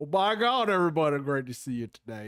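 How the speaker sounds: put-on lawyer voice with Southern accent. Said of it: "Southern lawyer B is like".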